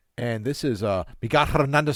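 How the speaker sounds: put-on loud Spanish-accented pronunciation of the name. Imitating newscasters saying their own name: imitating Spanish-accented name pronunciation. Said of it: "when they pronounce their name, they're like".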